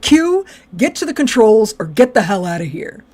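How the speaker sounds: put-on terse, snapped delivery. Retelling a scene where a character loses patience: imitating Geordi snapping. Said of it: "And Geordi fucking snaps".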